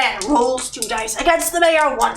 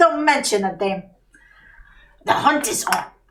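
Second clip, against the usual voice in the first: put-on British accent, narrator-style delivery; 3 semitones lower than usual. Answering a thanks while playing a character: British accent. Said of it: "now we go back into the British accent".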